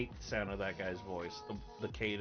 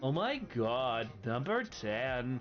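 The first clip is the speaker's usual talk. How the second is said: put-on serious Valley Girl voice, higher, louder, slower; 4 semitones higher, 5 dB louder than usual. Counting down a list, the speaker announces the next item in a serious-sounding Valley Girl voice. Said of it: "trying to sound serious with a Valley Girl voice".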